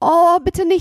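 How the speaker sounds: very high-pitched, scared, frightened pleading tone. Seppel answers Hotzenplotz, frightened. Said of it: "sagte Seppel erschrocken".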